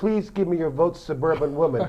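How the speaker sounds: plain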